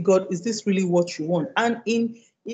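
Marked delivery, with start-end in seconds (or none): none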